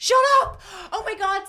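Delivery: very high, very loud, excited shriek. Host reacting to the David Tennant casting, scream. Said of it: "I'm sorry, I screamed".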